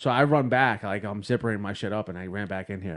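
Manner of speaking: usual speaking voice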